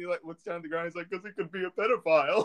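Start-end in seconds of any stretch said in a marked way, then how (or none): 1.1-2.5 put-on talking while laughing, higher pitch. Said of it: "And he laughs".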